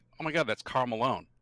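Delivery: ordinary delivery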